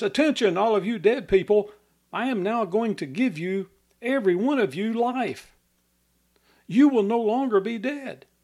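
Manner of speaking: loud commanding voice. Imagining standing in a cemetery, the speaker addresses the dead in a loud voice. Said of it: "You could say with a loud voice".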